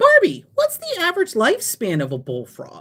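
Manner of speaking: mock, swooping, totally certain confident tone. Retelling a parent's question at a board game: imitating a fully confident question. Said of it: "she said it like she was, like, one hundred percent confident".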